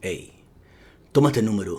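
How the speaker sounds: slight Italian mafioso mobster voice. Quoting a man handing over a phone number: Italian mobster voice. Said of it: "Esta voz me salió un poquito mafioso italiano".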